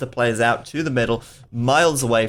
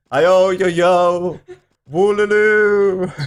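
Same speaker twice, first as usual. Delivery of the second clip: high, loud wailing ghost voice; 7 semitones higher, 6 dB louder than usual. While presenting a map, retrying a wallow sound: sounding like a ghost. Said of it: "I sound like a ghost".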